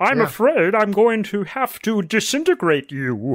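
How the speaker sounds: small, high-pitched alien character voice. Asked to do his one impression, the speaker tries Marvin the Martian voice. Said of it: "It's the only impression that I do reasonably well".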